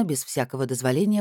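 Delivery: plain reading voice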